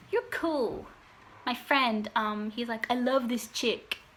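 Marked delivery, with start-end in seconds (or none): 2.9-3.9 put-on Arabic accent. Retelling what a friend said about the speaker: Arabic accent. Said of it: "I say in that accent because he's Arabic".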